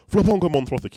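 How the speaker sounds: put-on Manchester accent. Retelling how a friend named a live stream: imitating Nick's Mancunian accent. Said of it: "in his amazing accent".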